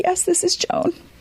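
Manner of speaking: acted out, all choked up, pitched very high. Retelling a phone call with the speaker's mom, imitating her choked up. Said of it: "And she's all choked up".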